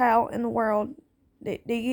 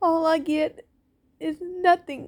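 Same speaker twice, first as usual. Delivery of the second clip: grieving, emotional voice, pitched high. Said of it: "I'm sorry that I'm getting emotional".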